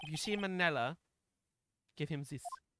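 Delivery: soft, partial, half-attempted French accent. Voicing a character in the scene, attempting a french accent. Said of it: "I'm trying to do like a French".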